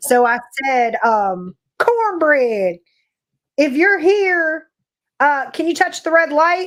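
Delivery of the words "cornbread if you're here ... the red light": acted Southern accent, higher pitch. Speaker retells calling out to Cornbread on a video, in a put-on Southern accent. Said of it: "I put on my best Southern accent".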